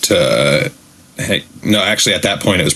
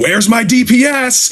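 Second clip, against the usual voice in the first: slow, drawn-out, shrill, very high scream. Retelling playing a game as Magneto: imitating own past screaming. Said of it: "just screaming".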